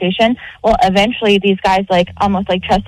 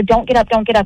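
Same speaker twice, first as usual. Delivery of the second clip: pleading, begging tone. Retelling begging a cousin not to get up: imitating own begging. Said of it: "I'm begging her".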